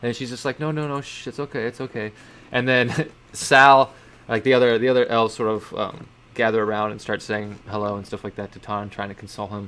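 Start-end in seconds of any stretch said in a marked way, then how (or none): 0.6-2.1 soft, tearful, crying, soothing hush. Narrating a reunion scene, a character comforts a sobbing companion while crying. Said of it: "they just start like crying".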